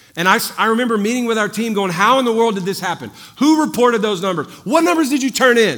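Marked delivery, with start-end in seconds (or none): 1.9-5.8 furious, angry drill-sergeant barking. Retelling a meeting with the team about the numbers: imitating getting mad like a drill sergeant. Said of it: "I'm getting mad like a drill sergeant".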